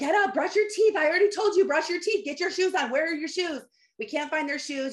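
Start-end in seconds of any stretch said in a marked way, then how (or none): 0.0-3.6 high, harried, angry scolding tone. Parent running late retells the morning rush, retelling screaming at the kids. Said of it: "Now I'm screaming at the kids and I'm like".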